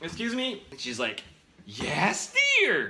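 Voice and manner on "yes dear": put-on bright, cheery, cheerful old woman voice. Retelling an encounter in a store aisle, quoting an older lady; imitating cheerful old lady. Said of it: "Older lady, maybe in the granny's age, very cheerful".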